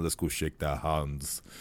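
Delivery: soft, put-on, vaguely European German accent. Recalling a scene, the speaker quotes one of the Iceland team: European German accent. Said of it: "kind of like European German accent".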